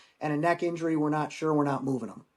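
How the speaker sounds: normal talking voice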